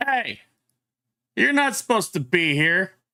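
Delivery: loud, high shouted call-out. Narrating a game, the game master voices a dragon fang, shouting out. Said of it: "shouts out".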